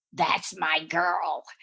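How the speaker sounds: very gravelly, rasping voice. Retelling first meeting someone at a party: imitating Joe Eula's gravelly voice. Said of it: "Joe was known for this very gravelly voice".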